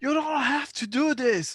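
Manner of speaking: very high, shrill, full-throated yelling. Playing a character who yells at Nessa: yelling. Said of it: "I'm gonna yell".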